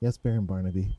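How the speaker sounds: soft, quiet, meek, submissive voice. Voicing a clown answering the Baron quietly: quiet, meek reply. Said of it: "she just quietly goes".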